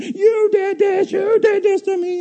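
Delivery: put-on piercing, very high, drawn-out scream. Recounting a man on a program screaming at his girlfriend, retelling a scream. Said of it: "this guy was screaming at his girlfriend".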